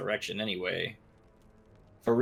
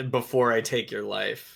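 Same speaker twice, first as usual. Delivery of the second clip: ordinary delivery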